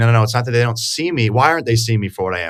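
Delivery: ordinary delivery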